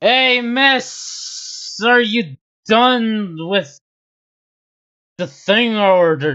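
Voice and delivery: put-on slurring like a drunk. Voicing a drunk customer asking a shopkeeper about his order: drunk slurred voice. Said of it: "Is he drunk?".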